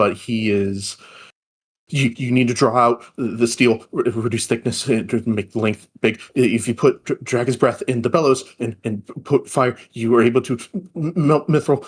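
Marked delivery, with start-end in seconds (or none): 1.9-11.8 fast, frantic, tumbling babbling ramble. A narrator voices a character sprinting to cool himself, frantic babbling. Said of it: "he is babbling what almost seems like nonsense".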